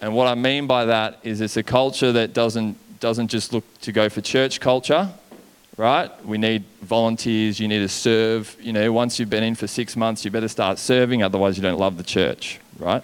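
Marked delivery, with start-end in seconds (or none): none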